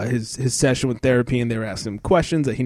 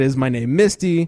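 ordinary talk, nothing marked

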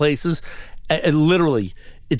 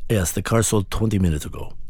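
strong, thick put-on Latin accent; 6 semitones lower than usual. Retelling the dealership salesman's reply about the sold car, in a heavy latin accent. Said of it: "With the heavy Latin accent".

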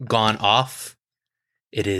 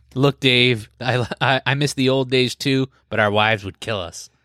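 normal talking voice

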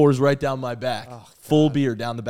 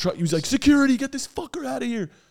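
mock screaming, much higher; 13 semitones higher than usual. Recounting an upset fan calling for security, retelling a scream. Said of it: "he starts screaming".

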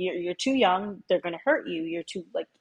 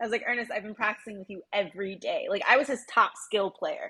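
normal talking voice

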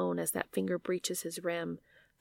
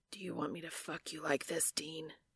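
rough, dangerous, very quiet low growl; 2 semitones lower, 9 dB quieter than usual. Reading a story aloud, voicing the angel character: low dangerous growl. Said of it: "The angel's voice is a low growl, rough and dangerous".

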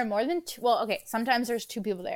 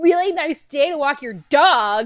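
put-on, needling, pointed, booming, passive-aggressive niceness; 4 semitones higher, 9 dB louder than usual. Retelling a lady's remark while walking the dog around the neighborhood, mock passive-aggressive. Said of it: "all passive aggressively".

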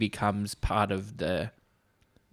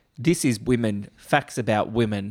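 ordinary talk

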